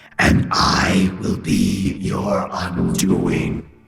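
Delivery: very low, deep, rough, rasping demon hiss. Narrating the demon Losifax introducing itself, in a hissing Losifax voice. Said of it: "it hissed".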